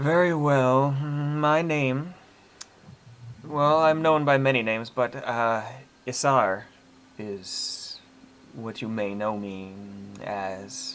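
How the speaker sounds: very slow, drawn-out half-mumble with lip smacks. Narrator voicing the dragon Isar answering a hiding listener, mumbling and lip-smacking. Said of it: "it kind of almost mumbles in places and seems to smack its lips".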